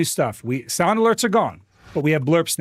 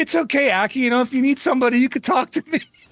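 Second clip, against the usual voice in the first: higher, comforting, consoling friend voice; 7 semitones higher than usual. Imitating a friend's comforting message from earlier: imitating Adnan. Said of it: "Adnan in Comstar earlier".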